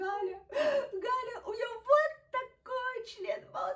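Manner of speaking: very high, very slow, drawn-out, loud sobbing voice. Retelling arriving at her friend's place in tears, retelling her own sobbing. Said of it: "рыдая".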